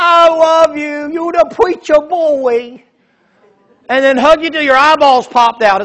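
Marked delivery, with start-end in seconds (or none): 0.0-2.8 mock boozy, sloppy, slow, drawn-out drunken gushing. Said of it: "He's like a drunk".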